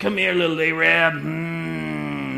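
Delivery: very slow, rough, gruff, drawn-out rasp. Recalling how the pastor called the speaker by his nickname, imitating his gruff voice. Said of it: "He had a real gruff voice".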